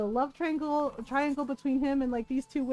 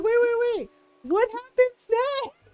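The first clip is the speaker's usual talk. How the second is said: acted, very high, raised, distressed, upset voice; 10 semitones higher, 5 dB louder than usual. Retelling a cousin's reaction to an episode ending: imitating someone upset. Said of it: "my cousin was so upset".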